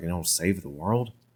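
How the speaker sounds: put-on whispering. Retelling a goddess's message to save the world: imitating a whisper. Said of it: "and it's like whispers".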